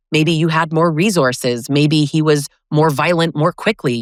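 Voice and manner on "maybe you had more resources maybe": usual speaking voice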